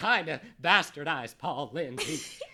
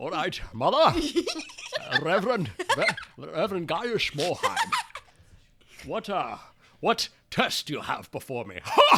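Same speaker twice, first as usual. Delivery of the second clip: put-on Scottish film star voice. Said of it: "I heard a Sean Connery out there".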